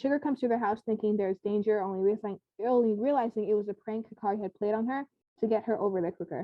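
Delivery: ordinary delivery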